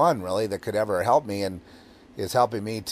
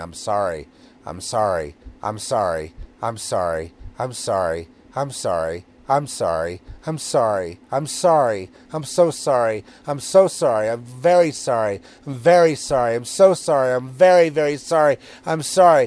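slow, cringing, curled-up tone, words repeated; 4 dB louder than usual. Retelling nights spent curled up in a ball: imitating a cringing apology. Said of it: "cringing and curled up in a ball saying".

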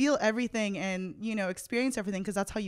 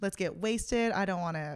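usual speaking voice

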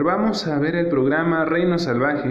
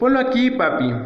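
excited, high, loud shout; 8 semitones higher than usual. Narrator reads Toby bursting into the room and calling to his father, shouting. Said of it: "Toby gritó".

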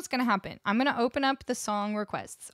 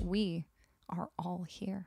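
grave, solemn, weighty gravitas, very slow and drawn out; 4 semitones lower, 7 dB quieter than usual. Showing how a plain statement sounds important, said with weighty gravitas. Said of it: "if you say it with enough gravitas".

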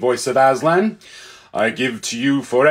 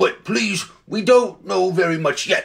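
snorty, nasal, pitched-up horse voice; 7 semitones higher than usual. Reading the story, the cab horse speaks up after the creatures answer: nosy, snorty voice. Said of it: "said a nosy and snorty kind of voice".

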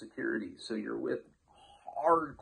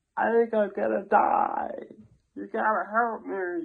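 put-on very loud, slow, strange, unrecognisable drunk-astronaut voice; 9 semitones higher, 8 dB louder than usual. Retelling pleading with a cop at his door, in a strange drunk-astronaut voice. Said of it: "I sound like some fucking drunk astronaut".

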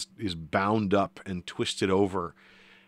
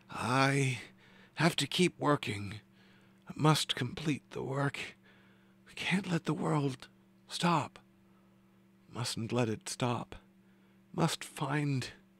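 thin, feeble, reedy voice, high and soft; 6 semitones higher, 5 dB quieter than usual. Narrator voicing a man who faces the group's accusation, weak, reedy voice. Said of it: "his voice is weak and reedy".

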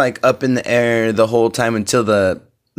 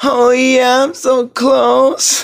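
loud, very high, camp, flamboyant cry; 4 dB louder than usual. Retelling how restaurant diners called out when close to bingo: retold loudest, gayest voice. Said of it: "in your loudest, gayest voice".

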